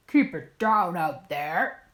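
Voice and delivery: deep, growly voice. Narrator reads a story; a voice interrupts the squealing, deep, growly Bear voice. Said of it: "interrupted by a deep, growly voice".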